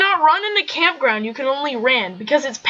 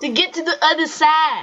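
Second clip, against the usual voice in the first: put-on Brooklyn accent. Delivering a joke's punchline, doing the accent on purpose: brooklyn accent. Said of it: "You gotta use the accent".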